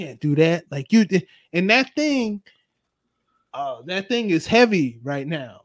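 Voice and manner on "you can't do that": lower whispered voice. Voicing a character that follows someone around: whispering. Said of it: "just whisper".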